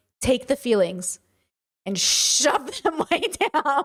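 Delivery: put-on slow, swooping, self-assured fatherly voice. Retelling advice the dad gave the kids: imitating a confident dad. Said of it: "gave us that advice with so much confidence".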